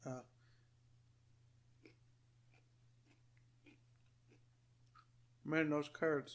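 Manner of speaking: talking with mouth full. Reviewing food between bites, talking with mouth full. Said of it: "I'm talking with my mouth full here".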